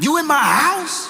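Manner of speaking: very high, menacing, ready-to-fight, threatening tone. Retelling a call to an intruder: imitating a bass-voiced confrontation. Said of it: "Bass in voice, ready to beat somebody down".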